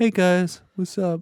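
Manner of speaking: high, bland, passionless host voice. Mocking the kind of podcast host who lacks passion: imitating a passionless host. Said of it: "one of these people who's like".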